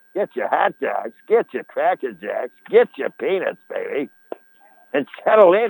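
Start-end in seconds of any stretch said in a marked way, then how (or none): 0.2-4.1 low put-on Boston accent. Calling a game, the speaker voices the newcomer's call in a boston accent. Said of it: "with the Boston accent".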